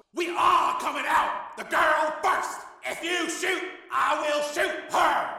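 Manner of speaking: very high, shrill yell. A terrorist holding a girl at gunpoint calls out to those outside, yelled. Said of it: "the terrorist yelled".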